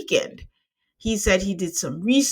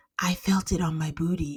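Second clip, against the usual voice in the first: timid, soft, hushed stage whisper; 2 semitones lower, 6 dB quieter than usual. Retelling what a woman half-whispered to a producer, in a put-on half-whisper. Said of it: "And then she whispers".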